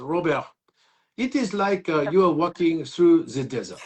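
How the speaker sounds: put-on French accent on English words. Retelling advice a french man gave him about his career, french accent. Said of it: "great accent".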